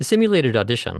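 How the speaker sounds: this rushed and swallowed, nearly lost. Demonstrating how most voice actors read an audition opening, rushing the word 'this'. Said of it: "listen to how fast the word this is".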